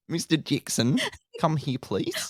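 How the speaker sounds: sing-song mock voice. Imagining someone summoning Mister Jackson, Kath and Kim voice. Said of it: "Now I'm sounding like Kath and Kim now".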